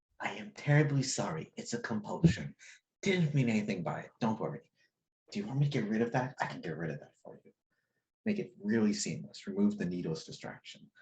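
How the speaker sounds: soft whispering. Acting out someone in your car whispering an apology to the car: retelling a gentle whisper. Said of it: "leans over and just whispers to the car".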